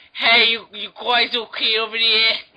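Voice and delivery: put-on loud, high, old-timey 1920s street bully voice. Describing the kayak guy in Jaws, quoting his line in a 1920s bully voice. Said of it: "sounds like a nineteen twenties bully".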